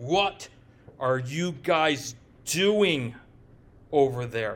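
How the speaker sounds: halting, ground out through gritted teeth and pursed lips. Retelling what the archbishop said at the intervention, imitating speaking through gritted teeth. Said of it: "He said it with pursed lips and just grinding his teeth".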